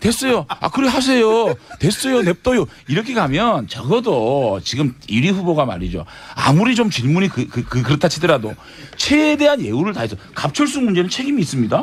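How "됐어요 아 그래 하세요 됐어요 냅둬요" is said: peevish, irritable, snappish tone, higher pitch. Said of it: "그렇게 신경질적으로 반응하고".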